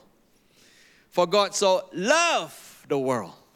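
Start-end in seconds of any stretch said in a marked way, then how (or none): 1.1-3.3 LOVED stressed, slow and drawn out. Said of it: "each time I emphasize different word".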